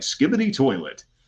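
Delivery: goofy, high, corny robocall-salesman announcer voice. Showing how silly phrases sound even sillier in that voice, the speaker says one; corny voice. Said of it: "with that voice like".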